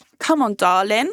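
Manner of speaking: put-on chavvy British bloke accent. Voicing one of her men asking someone back to his, chavvy british man accent. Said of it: "I'm giving them the accent".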